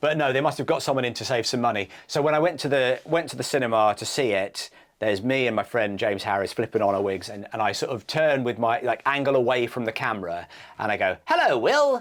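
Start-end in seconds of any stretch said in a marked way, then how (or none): 11.2-12.0 very high-pitched, dubbed-over stand-in voice. Retelling a dubbed film line: imitating the dubbed-over voice. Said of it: "in, like, that voice".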